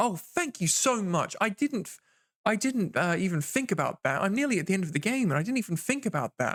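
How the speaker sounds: high-pitched, heavily sarcastic, fake-grateful tone. Retelling own reply to a backseating viewer: imitating own sarcastic reply. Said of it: "I met them with a lot of sarcasm".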